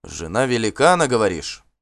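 ordinary talk

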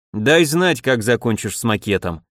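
ordinary delivery

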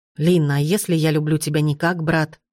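ordinary delivery

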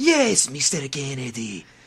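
put-on game-character voice, swooping, wide showy pitch swings. Retelling how the two met, redoing a Salazar impression. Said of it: "Resident Evil four impersonation of".

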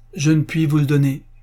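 choked, strangled voice, barely getting words out. A man puts his hand on the banknotes and answers his companion in a choked voice. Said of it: "dit-il d'une voix étranglée".

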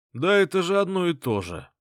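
scornful, derisive jab. Reading a novel, a character who stood aside cuts into the conversation, mocking. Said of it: "с издевкой произнес Стас".

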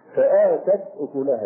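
normal talking voice

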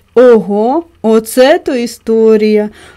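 very slow, drawn-out, astonished exclamation. A woman reacts when the storyteller stops speaking, surprised. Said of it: "вражено вимовила вона".

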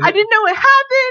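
hysterical outburst. Retelling a friend's panicked phone call: imitating someone in hysterics. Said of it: "she is in hysterics".

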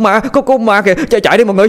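frantic, panicked stuttering shout, very high. Đạt points across the street and shouts to the group, panicked stammering shout. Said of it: "Đạt la lên hoảng loạn, chỉ tay về phía bên kia đường mà lắp bắp nói".

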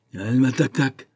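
jeering, sneering voice with a snicker. A boy of about ten calls out to Saïd as he cleans, snickering. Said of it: "lui lance en ricanant".

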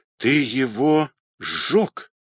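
faltering, trembling, quavering voice. Olga, learning what Pavel did overnight, speaks to him in a trembling voice. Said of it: "дрогнувшим голосом сказала Ольга".

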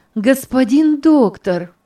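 nearly jubilant outburst. A young woman greets the doctor, almost jubilant exclamation. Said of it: "почти ликующе воскликнула Анастасия".

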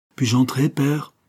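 mild, polite, gentle, high-pitched voice. A woman's voice behind the door asks to come in, asking softly. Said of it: "demandait doucement".

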